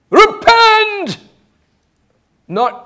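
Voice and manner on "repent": very high, ringing shouted call. Retelling how John preached in the wilderness: imitating John shouting. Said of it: "you can hear him shouting".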